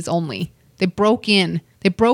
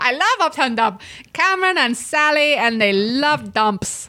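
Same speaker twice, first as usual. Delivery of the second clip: high-pitched put-on Latin American accent; 6 semitones higher than usual. Imitating a podcast listener who loves their show, in a put-on accent. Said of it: "What accent is that?".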